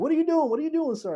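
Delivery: acted, very high-pitched screaming alarm. Retelling how older employees reacted to the phone being answered: imitating employees screaming. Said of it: "they screaming at me".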